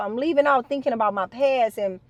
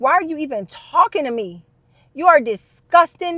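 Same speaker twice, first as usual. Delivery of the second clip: loud, furious, angry outburst; 3 semitones higher, 5 dB louder than usual. Retelling own words to a cousin: imitating her own furious retort. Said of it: "I was so mad".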